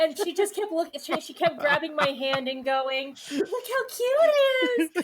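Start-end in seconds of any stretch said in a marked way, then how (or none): 3.3-5.0 very high, drawn-out, weepy drunken gushing, acted. Retelling a story about a drunk friend gushing over something cute, acting out her tearful voice. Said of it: "she was just crying about this child".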